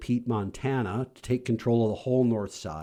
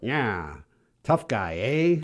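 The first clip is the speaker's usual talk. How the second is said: put-on old-time prohibition-era gangster voice. After a co-speaker declines to try it, the speaker attempts it: Edward G. Robinson impression. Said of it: "can you do an Edward G".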